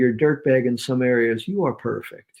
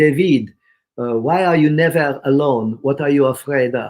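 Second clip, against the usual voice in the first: put-on loud French-accented speech; 6 dB louder than usual. Retelling what a girlfriend asked him years ago: French accent. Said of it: "in her beautiful French accent".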